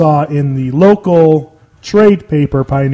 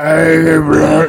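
put-on voice like gargling lava. Retelling a radio caller's words, imitating a gargled-lava voice. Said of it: "it sounded like he gargled, gargled lava".

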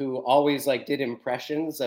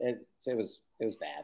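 ordinary talk

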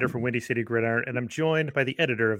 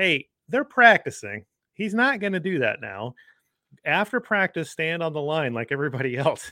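mock raised, pitched-up yell; 5 semitones higher, 3 dB louder than usual. Retelling telling kids to wait until after practice: imitating own past yell. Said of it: "And so I yelled".

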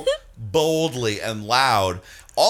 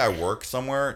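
plain

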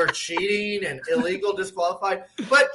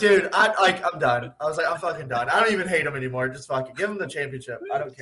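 normal talking voice

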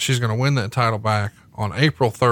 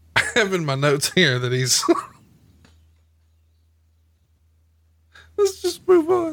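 high, swooping voice, holding back laughter mid-sentence; 9 semitones higher than usual.

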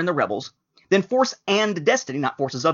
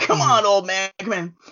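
put-on old man voice with a lisp, higher; 5 semitones higher than usual. Imagining an old boxer in a nursing home: imitating an elderly Mike Tyson lisp. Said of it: "super senior citizen lisp".

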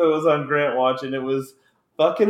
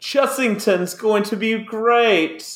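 clumsy, bad fake British accent, pitched up; 8 semitones higher than usual. Mocking what british listeners would say, in his worst fake british accent. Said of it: "my worst accent ever".

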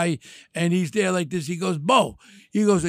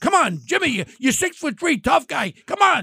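put-on yelling, higher pitched; 8 semitones higher than usual. Retelling what was said on a call to the guys: retelling a yell. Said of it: "I'm yelling at them".

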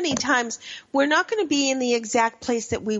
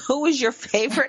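snide, sarcastic, mocking tone; 3 semitones higher than usual. Asking whether finding help means posting on Facebook: sarcastic. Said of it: "I'm saying that sarc-, sarcastically".

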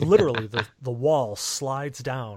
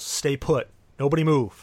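drawn-out shouting guard voice; 3 dB louder than usual. Voicing a guard who orders the players to freeze: guard yelling. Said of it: "the guard yells".

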